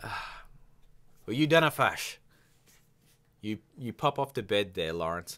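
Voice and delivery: put-on, period-drama style Scottish accent. Sending off a co-host who is going to bed, Outlander Scottish accent. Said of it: "I'm using a bit of Outlander on you".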